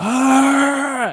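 freaked-out scream, high and loud.

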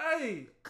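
laughing mock scolding.

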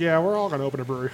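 mocking, put-on condescending man's tone. Telling a story about a guy at the OMF, mocking a condescending guy. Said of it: "this guy was like super condescending".

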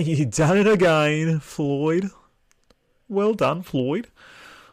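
attempted Australian accent.

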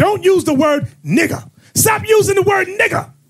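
angry, scolding tone. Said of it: "People get mad and say".

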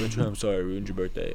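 put-on mopey tone. Retelling how he kept apologizing to Trey, imitating a mopey voice. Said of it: "You got really mopey".

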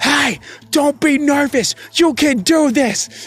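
acted-out yelling. Retelling a voicemail left for someone who hung up, retelling a yelled voicemail. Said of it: "I just yelled".

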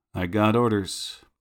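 flat deadpan delivery. A man, already over his initial shock, answering deadpan. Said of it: "deadpan when he says".

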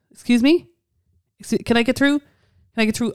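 very polite voice. Retelling how Tom first asks to get through: imitating Tom being very polite. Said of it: "he'll be very polite first".

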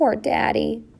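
small, little voice. After a moment's silence following sharp news, one child speaks up in a small voice. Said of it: "in a small voice".

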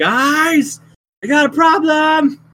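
booming, very high, very slow, drawn-out yell. Calling the group in character after throwing back an arrow: yelling for help. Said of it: "I'm gonna yell".

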